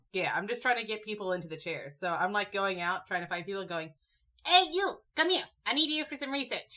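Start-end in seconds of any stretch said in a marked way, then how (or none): 4.4-6.7 put-on New York accent, pitched high. Player in another person's form calls passersby over for research: Ollivander in New York accent. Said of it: "the New York accent coming out of Ollivander".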